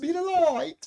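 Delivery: put-on British accent. Repeating a uk viewer's sign-off, imitating a uk accent. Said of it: "with her U K accent".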